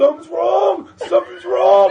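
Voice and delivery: very loud, high, shrill, frantic panicked scream. Retelling waking the family during an allergic reaction: imitating own screaming. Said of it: "I'm screaming".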